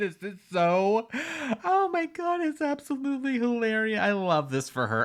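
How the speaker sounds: high, laughing through the words. Reacting to a clip found hilarious, laughing while talking. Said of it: "I'm sorry that I'm laughing the whole entire time".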